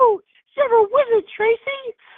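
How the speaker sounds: squeaky, very high mock character falsetto.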